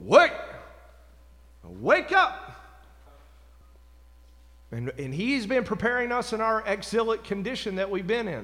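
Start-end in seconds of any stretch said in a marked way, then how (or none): 0.0-2.5 put-on commanding voice, higher and louder. Voicing a prophet's call to the nation, acting out a command voice. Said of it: "coming out with a command voice".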